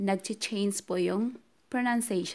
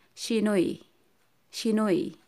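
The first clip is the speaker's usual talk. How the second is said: quick, rattled-off repetition, no lingering. Showing a learner how to say the word: said fast.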